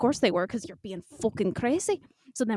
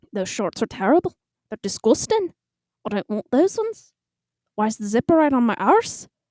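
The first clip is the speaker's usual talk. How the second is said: really bad fake Irish accent, raised grumbling; 6 dB louder than usual. Retelling walking through shop aisles, muttering under their breath: bad Irish accent. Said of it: "I have to do a really bad, like, freaking Irish accent".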